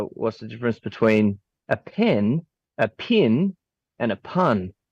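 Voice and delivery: New Zealand accent, strongest on the vowels. Showing others how to do a new zealand accent. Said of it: "New Zealand accent".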